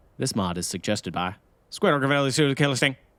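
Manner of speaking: put-on loud raffle-caller patter slurred into mush. Reading out who suggested the mod, trying a raffle voice, mushed raffle-caller voice. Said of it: "do this in like a in a like a raffle voice".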